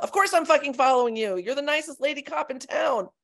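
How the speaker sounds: put-on yell. Reading aloud a personal story about meeting a cop: retelling own yell. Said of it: "And I yell".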